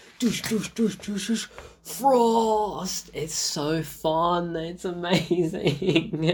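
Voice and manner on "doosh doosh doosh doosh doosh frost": mock high shrieking, with frost long and drawn out. Describing a fight scene from a beloved film, imitating Blade screaming. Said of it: "he's just screaming. He's like".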